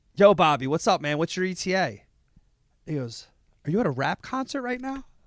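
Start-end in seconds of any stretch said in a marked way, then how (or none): 0.2-2.0 put-on Philadelphia accent. Retelling his own phone call to a man, in a Philly accent. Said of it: "that's my Philly accent".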